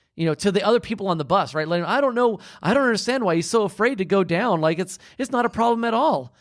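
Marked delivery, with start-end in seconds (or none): 1.9-6.2 put-on high, scornful, taunting, making-fun tone. Retelling a woman on the bus mocking a man: imitating someone mocking. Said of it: "she starts making fun of him".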